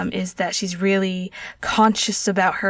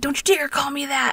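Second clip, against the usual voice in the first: high screech with all-out fury; 7 semitones higher than usual. Retelling a woman's line screeched at him in an 1800s story: acted-out furious screech. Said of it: "she screeches this at him. It's like".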